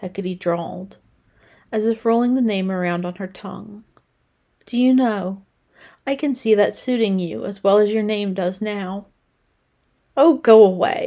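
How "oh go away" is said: loud comeback tone. Pippa answers her teasing customer Hecate with a cloth in hand: retorting. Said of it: "Pippa retorted".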